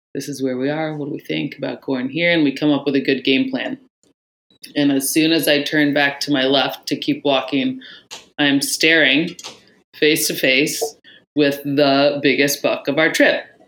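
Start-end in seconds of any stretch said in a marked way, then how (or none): 0.2-2.4 super quiet, hushed half-whisper. Retelling comparing maps with another hunter while stalking, imitating a half-whisper. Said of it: "that we're super quiet, whispering".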